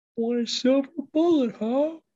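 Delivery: very high dad voice. Musing about a silver bullet, in a voice like Dana Carvey's dad impression. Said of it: "that voice you just did".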